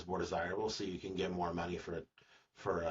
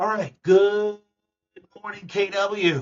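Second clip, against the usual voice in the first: very high, shrill, very loud put-on caricature voice; 14 semitones higher, 15 dB louder than usual. Opening a video with an imitation of a greeting: Marty Miller impression. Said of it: "my best Marty Miller impression".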